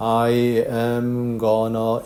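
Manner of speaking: slow, each word separate, drawn-out am. English contraction lesson, how gonna should not sound: slow delivery. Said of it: "천천히 하면서 I am gonna 이런 식으로 아닙니다".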